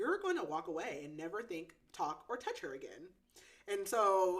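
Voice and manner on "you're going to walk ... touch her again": plain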